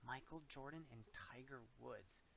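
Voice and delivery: very quiet, hushed secretive voice. A woman answers who is in the guarded room, in a hushed voice. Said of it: "she said in a hushed voice".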